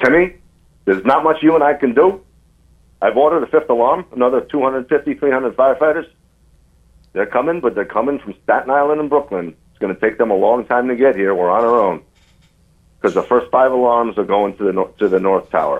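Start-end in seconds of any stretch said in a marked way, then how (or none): 0.0-12.0 put-on rapid, heavy, thick New York accent, high-pitched. Retelling a chief's orders during an emergency: imitating thick new york accent. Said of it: "he would talk with a much thicker New York accent".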